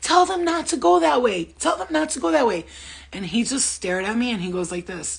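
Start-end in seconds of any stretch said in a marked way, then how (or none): 0.0-2.7 put-on very high, rough, desperate screaming. Recounting a story, the speaker re-enacts yelling at a fake Jesus: retelling desperate yelling. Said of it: "I'm yelling at him".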